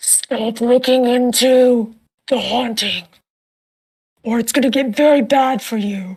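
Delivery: muffled, masked, unidentifiable disguised voice. Retelling a haunting story, speaker quotes the figure speaking from the shadows: muffled disguised voice. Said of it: "They're kind of muffling it".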